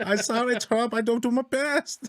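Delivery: very high, slow, dragged-out teasing, mocking voice. Joking about a friend who fumbles his taxes, imitating a friend. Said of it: "if we're gonna imitate him".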